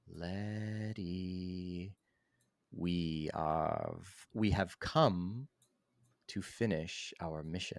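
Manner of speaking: three voices speaking perfectly together in unison. Describing voices heard in one's head, quoting them speaking in unison. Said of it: "they just say uh, in unison".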